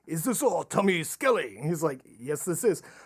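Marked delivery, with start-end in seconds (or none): 0.1-1.5 put-on Japanese accent in English. Retelling a phone call where callers ask for tommy skelly, in a japanese accent. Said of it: "they were in their Japanese accent".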